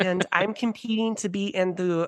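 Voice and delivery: put-on Minnesota accent. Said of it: "Her Minnesota accent is so good".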